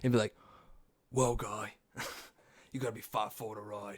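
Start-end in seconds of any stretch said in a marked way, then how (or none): 1.1-4.0 hard, badass, no-nonsense tough-guy voice. Imagining Jason Statham working at a theme park: Jason Statham impression. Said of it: "if that dude worked at a theme park".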